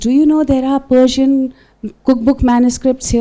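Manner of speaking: whispered voice. Retelling what a librarian came and said: imitating a whisper. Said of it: "he whispers".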